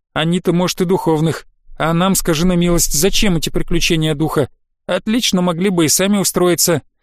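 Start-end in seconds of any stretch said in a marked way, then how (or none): none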